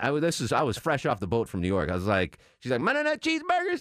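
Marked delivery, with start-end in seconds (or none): 2.8-3.8 put-on high-pitched, heavy Southern accent. Retelling a counter worker's order question: imitating thick Southern accent. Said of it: "such a thick Southern accent".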